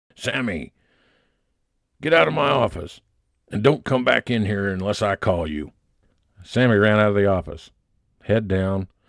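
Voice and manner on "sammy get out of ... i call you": rough, gruff, mock tone. Reading a story, the editor orders sammy out: booming gruff voice. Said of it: "with a booming, gruff voice and a wink".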